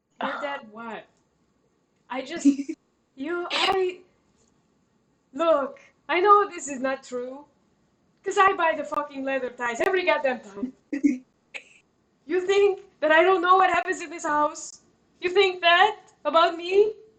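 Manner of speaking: distraught, desperate, high, loud ranting outburst. Playing the head butler of the house, very sad and very desperate. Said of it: "very sad, very desperate right now".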